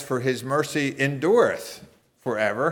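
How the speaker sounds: endureth stressed, rising at the end. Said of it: "Or you could emphasize".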